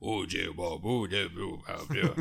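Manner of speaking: very low, deep, soft, mumbling tree voice. Talking about favorite parts, imitate the narrating tree: mumbling tree voice. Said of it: "and he's mumbling".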